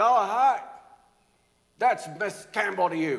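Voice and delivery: very loud booming voice. Retelling how the speaker's aunt and teacher answered in class: booming voice. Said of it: "she has this booming voice".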